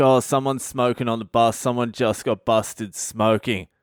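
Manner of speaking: ordinary talk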